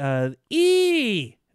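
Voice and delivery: "E" yelled, high-pitched and loud.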